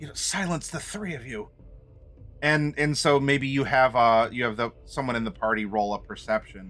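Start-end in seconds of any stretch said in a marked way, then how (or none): 0.2-1.5 annoyed, frustrated, hushed whisper under the breath. Describing a game scene, the speaker voices a character hushing three others, frustrated whisper. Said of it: "She whispers in a frustrating tone".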